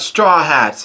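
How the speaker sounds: plain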